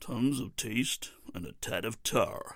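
slow, careful, deliberate American accent. Repeating a cigarette slogan, trying it again in an american accent. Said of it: "I'll try with an American accent".

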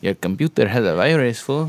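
put-on Mexican accent gradually creeping into the speech. Mimicking a phone scammer, slipping into an unintended Mexican accent. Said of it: "why am I sounding Mexican?".

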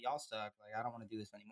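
muttering under breath. Retelling a reality show contestant's quiet remark during football: imitating someone muttering under her breath. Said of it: "under her breath".

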